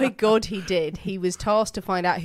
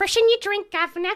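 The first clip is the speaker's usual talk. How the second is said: put-on toothless voice, higher; 13 semitones higher, 4 dB louder than usual. Picturing a disguised investigator in a tavern: imitating a toothless prostitute. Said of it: "he was going as a toothless prostitute".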